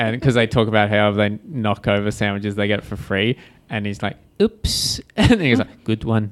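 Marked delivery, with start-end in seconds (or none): 4.4-6.3 put-on bad New Zealand accent, slower. Retelling a Simpsons scene at a Subway shop, in a bad New Zealand accent. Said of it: "that was the worst New Zealand accent in the world".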